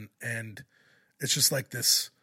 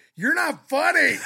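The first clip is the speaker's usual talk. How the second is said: very high, very loud, shrill yell; 10 dB louder than usual. Retelling how a girl yelled out three minutes into his joke: imitating a girl yelling out. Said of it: "a girl just yells out".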